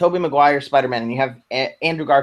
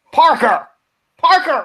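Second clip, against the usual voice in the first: voice pushed up very high in pitch; 13 semitones higher, 4 dB louder than usual. Now that there are pictures of Spider-Man, attempt a J. Jonah Jameson impression. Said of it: "I'm going to do my J. Jonah Jameson impression".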